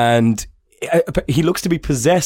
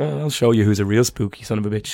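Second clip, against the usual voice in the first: plain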